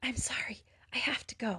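whispering desperately. Brandy, shooting up from the couch, tells Trent she must go, in a desperate whisper. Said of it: "she whispered desperately".

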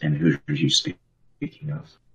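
whispered voice. Replying after someone says they didn't hear, whispering. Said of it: "Tegan whispers".

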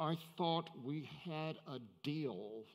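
hissed, hissing delivery. Telling a joke, acting out the groom to the minister, retelling a hiss. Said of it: "leaned toward the minister and hissed".

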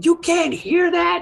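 shouting, very high-pitched. In character, looking up and asking whether the others can hear it, shouting. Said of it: "like shouting it".

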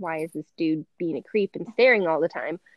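usual speaking voice

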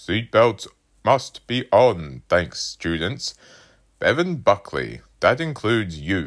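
loud, booming announcement voice over a loudspeaker. A man addresses the students over the loudspeaker; booming over a loudspeaker. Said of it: "voice boomed from the loudspeaker".

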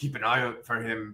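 put-on abrupt switch to Irish accent. Retelling a scene, the speaker quotes Boba Fett in an Irish accent. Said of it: "I made Boba Fett just sound like an Irish guy".

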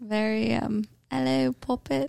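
put-on British-accented butler voice. A podcast host repeats the butler bit from the Halloween intro, British accent. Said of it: "I really liked the British guy".

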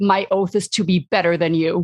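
said very loudly. Declaring an oath in character while striking an enemy: said very loudly. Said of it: "say very loudly".

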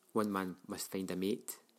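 ordinary delivery

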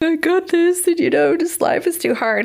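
high, teary-eyed, tearful pleading tone.

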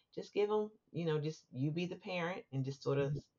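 ordinary talk

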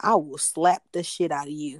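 imitated dead-serious, meant-it tone. Retelling what a new acquaintance said after the speaker's joke, mock dead-serious threat. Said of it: "But like the way he said it, like I knew he meant it".

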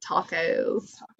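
very hushed, soft, put-on young woman voice.

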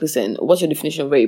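plain

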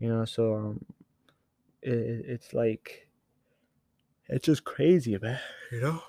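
speaking through a yawn. Speaker telling listeners about his experiences, yawning. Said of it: "Sorry, I'm yawning".

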